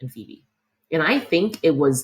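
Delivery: ordinary delivery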